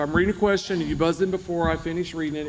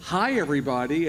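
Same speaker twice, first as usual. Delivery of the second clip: ordinary talk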